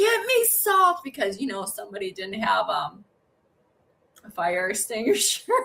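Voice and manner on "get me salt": put-on very high, urgent scream. Retelling almost burning the house down: retelling own scream. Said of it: "and I'm screaming".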